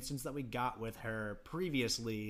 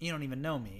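normal talking voice

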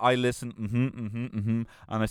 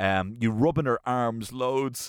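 ordinary delivery

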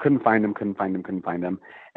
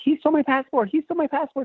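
mock, very high, shrill scream. Retelling a passport theft at a train station, the speaker re-enacts her screaming: retelling a scream. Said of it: "i'm screaming".

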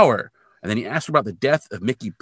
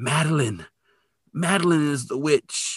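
put-on weak, faint voice, much slower; 3 semitones higher than usual. Recounting an episode where a fallen woman speaks before passing out, mimicking a weak, faint voice. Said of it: "she weakly says".

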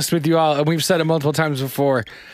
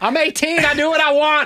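very high, shrill, relentless yelling; 10 semitones higher than usual. Retelling what you used to yell at eighteen: imitating own past yelling. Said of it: "I would just relentlessly yell".

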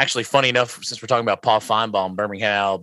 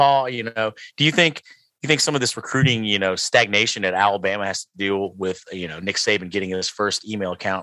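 ordinary delivery

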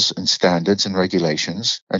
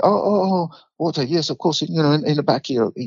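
put-on Indian accent, much higher pitch; 7 semitones higher than usual. Retelling how a man answered when asked for water, in an indian accent. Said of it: "He was Indian speaking".

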